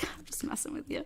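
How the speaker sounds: high, whispered, teasing and reassuring.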